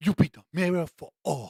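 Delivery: thick, overdone Latin American accent with attitude.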